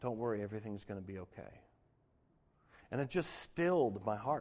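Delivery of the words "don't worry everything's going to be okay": faint, barely there, very small soft half-whisper. Retelling hearing God speak while crying in the car: imitating a very small half-whisper. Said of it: "in a very small whisper".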